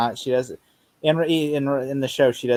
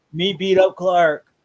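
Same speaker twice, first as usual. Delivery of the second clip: dim-witted put-on villain voice, higher and louder; 5 semitones higher, 6 dB louder than usual. Showing how the character sounds in the comics: comic-book Bizarro voice. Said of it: "in the comics, he sounds more like this".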